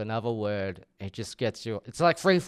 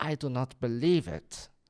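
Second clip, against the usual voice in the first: put-on slow, older-sounding German accent. Retelling what an assessor said at an assessment: imitating an old german man. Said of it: "was an old German guy, was like".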